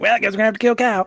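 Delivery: put-on high cartoon kid voice. Imagining a cartoon character's line in a horror movie: Cartman voice. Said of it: "I just imagine Cartman being like".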